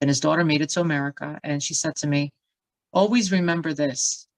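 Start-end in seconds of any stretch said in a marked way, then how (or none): 2.9-4.2 stern, grave, firm, commanding tone. Retelling what a woman in a bookshop said: imitating a loud, stern voice. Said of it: "she said in, like, a loud, stern voice".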